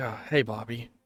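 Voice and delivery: put-on robot voice, calm monotone. Voicing Proto Man greeting Bobby: calm monotone Proto Man voice. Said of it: "mostly a very calm, monotone voice".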